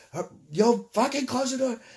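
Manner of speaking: high, loud, urgent shout.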